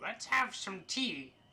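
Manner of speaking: put-on high, crunchy old witch voice, like crunching leaves. Storyteller voicing an old witch character: crunchy little old witch voice. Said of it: "a voice reminiscent of crunching leaves".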